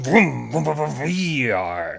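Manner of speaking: slow, loud engine revving sound.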